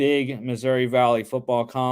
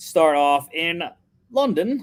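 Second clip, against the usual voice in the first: put-on British accent, pitched up; 5 semitones higher, 3 dB louder than usual. Speaker running through the week's football picks; put-on British accent. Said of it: "if that was a good accent".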